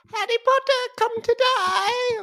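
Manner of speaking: high-pitched, squeaky voice.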